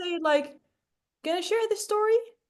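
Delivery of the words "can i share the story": rising tone, pitch climbing up on story. Showing a learner how to ask the question: rising tone. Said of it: "So you go up".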